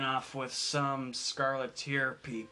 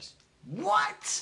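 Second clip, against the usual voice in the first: exasperated, much higher and louder; 4 dB louder than usual. Narrating the scene, voicing Dick calling out from the back; exasperated. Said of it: "an exasperated voice in the back".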